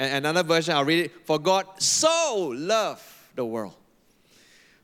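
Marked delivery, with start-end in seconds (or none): 1.3-3.7 so stressed, slow and drawn out. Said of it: "each time I emphasize different word".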